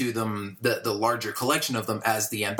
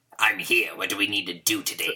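put-on throat-grating villain voice; 2 semitones lower than usual. Imagining using the voice at work on Monday, speaking in a Palpatine voice. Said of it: "sounding like that normally".

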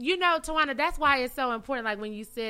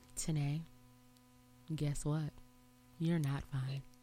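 hushed, deep, very soft, super-calm counsellor tone; 7 semitones lower, 11 dB quieter than usual. Retelling what he told you in that therapy moment, imitating a super-calm therapist voice. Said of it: "he had one of those therapist voice, super calm".

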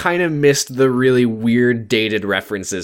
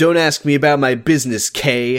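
plain

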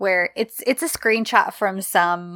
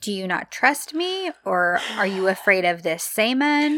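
plain

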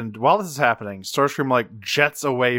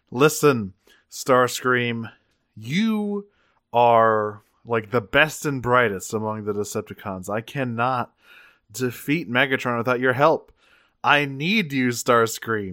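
ordinary talk

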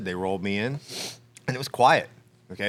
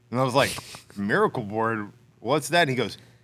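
ordinary delivery

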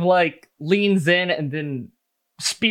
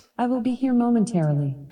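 high, home voice-assistant announcement voice; 6 semitones higher than usual. Voicing a robot that answers from the Gundam: Alexa voice. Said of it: "You hear the voice of Alexa".

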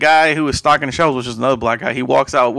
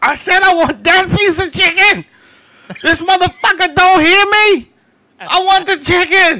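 mock very high, shrill, full-volume furious scream; 4 dB louder than usual. Retelling a customer screaming about chicken at a counter: imitating a man screaming. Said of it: "he's screaming at the top of his lungs this".

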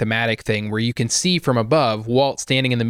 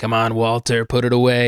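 sly, flat, level monotone. Retelling a scene about Walt, acting a line in sly Mike-style monotone. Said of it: "that sort of like Mike, you know, sly, like really monotone voice".

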